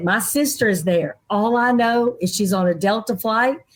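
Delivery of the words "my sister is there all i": usual speaking voice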